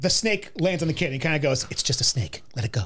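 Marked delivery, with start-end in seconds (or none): 1.7-2.9 whispery put-on voice, much lower. Act out how he talks when the snake lands on the kid, in a whispered Harrison Ford delivery. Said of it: "like when he whispers".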